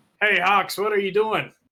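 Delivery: very high, loud, screamed call. Playing a character calling out to Hawks: screaming out in character. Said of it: "And I scream out".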